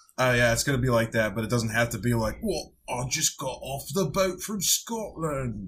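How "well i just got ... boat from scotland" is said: put-on Cockney accent, much higher, slower. Asked if that is his voice, a speaker shows a character talking, Cockney accent. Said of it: "That's just straight Cockney".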